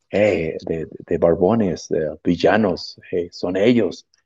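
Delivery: mock whispering voice. Retelling what people on the streets do: imitating people whispering. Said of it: "whispering, like".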